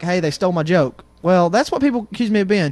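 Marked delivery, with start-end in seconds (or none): none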